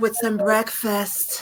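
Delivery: slow, drawn-out mock phone-sex voice. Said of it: "she put the phone sex".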